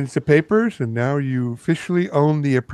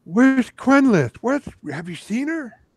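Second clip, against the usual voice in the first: shrill, very high shouting; 10 semitones higher than usual. Voicing the shouting that wakes the players in the morning: shouting. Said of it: "you wake up to shouting".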